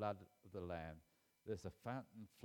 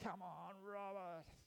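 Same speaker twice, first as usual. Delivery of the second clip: put-on very high, very loud shout; 11 semitones higher, 3 dB quieter than usual. Recalling his late father at his rugby matches, imitating dad's loud shout. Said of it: "he had a very loud voice".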